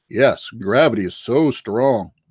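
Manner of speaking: mock sarcastic tone. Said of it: "flat earthers state facts sarcastically".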